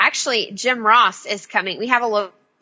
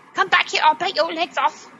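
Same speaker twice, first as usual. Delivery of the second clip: put-on British accent, pitched high; 9 semitones higher than usual. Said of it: "Speaking of British accents".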